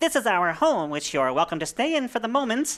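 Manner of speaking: high-pitched storybook sprite voice. As the lead sprite addressing the Fellowship, in a high-pitched sprite voice. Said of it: "says the lead sprite in a high-pitched voice".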